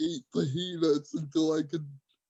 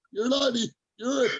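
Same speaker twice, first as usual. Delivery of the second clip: screaming voice. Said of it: "screaming at me".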